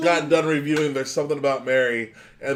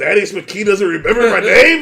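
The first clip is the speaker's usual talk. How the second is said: very loud, indignant, pitched-up pissed-off outburst; 6 semitones higher, 9 dB louder than usual. Imagining people whose names were forgotten watching, the speaker acts out them being pissed. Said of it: "They're just so pissed".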